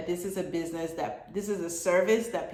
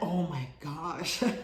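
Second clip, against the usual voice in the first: deep voice dropped down low; 4 dB quieter than usual. Talking about choosing what you are passionate about, saying an exclamation in a deep voice. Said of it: "I don't know why my voice is deep there".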